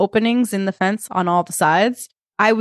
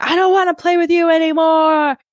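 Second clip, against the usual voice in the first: put-on acted sobbing child's wail, very high-pitched scream; 9 semitones higher, 4 dB louder than usual. Recounting a boy at recess storming away from his friends: imitating a crying, screaming boy. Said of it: "he's screaming and he's crying and he's saying".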